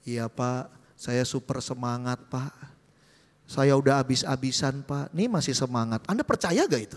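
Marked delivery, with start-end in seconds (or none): 0.0-6.0 listless, drained, very low, limp mumbling drone. Acting out someone answering a leader about enthusiasm, mock-limp, low-energy reply. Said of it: "Semangat apa nadanya begitu coba? Ya segitu loyo".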